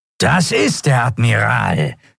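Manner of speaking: harsh, grating, rasping voice. Narrator reading a reptile creature's spoken line, rasping. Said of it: "schnarrte der Draxyl".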